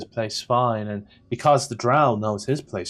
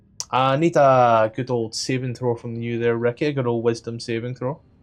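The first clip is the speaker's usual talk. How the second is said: ordinary talk, nothing marked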